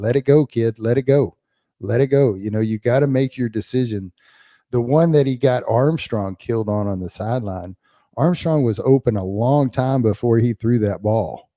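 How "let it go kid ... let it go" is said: mock, urgent, shouted yelling. Recounting watching a player hold the ball too long, retelling yelling at the TV. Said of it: "I start yelling at the TV".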